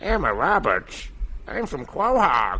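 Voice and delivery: slow, drawn-out sing-song voice swooping up and down. Guessing a celebrity and answering as the character: Peter Griffin impression. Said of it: "one of your better impressions".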